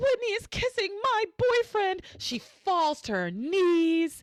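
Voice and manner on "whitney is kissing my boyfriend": high, tearful, sobbed-out crying. Retelling a scene where a character breaks down: imitating someone crying. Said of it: "She cries. She goes".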